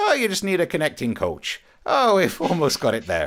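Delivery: put-on high, sing-song airline staff accent. Imitating how Ryanair would react to the flight plan: imitating Ryanair staff accent. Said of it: "that's as close to that accent as I can do".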